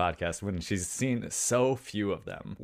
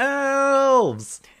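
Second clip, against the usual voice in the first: put-on very loud, very high, drawn-out kid yell; 11 dB louder than usual. Retelling a movie moment when a kid on the train yells: imitating a kid yelling. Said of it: "one of the kids on the train just yells".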